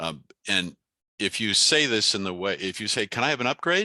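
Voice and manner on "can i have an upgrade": plain rising intonation lifting on "upgrade". Challenging listeners to ask the desk for an upgrade: asking as a plain question. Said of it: "because you're just asking a question".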